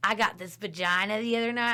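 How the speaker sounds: blunt, matter-of-fact, bragging tone. Retelling what a guy who comes up says, imitating a guy's way of saying it. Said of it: "that's how he says it".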